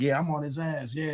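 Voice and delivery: mock amped-up, excited, fired-up bravado. Retelling own reply to a friend's question about a rival: imitating own hyped self. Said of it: "I got all hyped".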